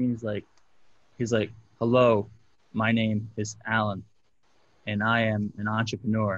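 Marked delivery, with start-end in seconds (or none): 1.8-6.4 imitated stiff, stilted reading-aloud delivery. Retelling a testimonial call: imitating someone reading off a screen. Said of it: "he's literally reading the screen".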